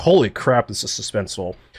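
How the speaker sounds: ordinary delivery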